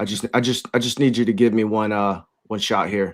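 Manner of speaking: halting, slightly stumbling football coach voice. Doing a Belichick impression after another speaker says do it: Belichick impression. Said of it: "do you want me to do my Belichick impression?".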